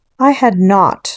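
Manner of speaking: sharp, snapping, very angry tone. Reading a story aloud, a character snaps back at another, sharp and very angry. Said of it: "sharply and very angrily".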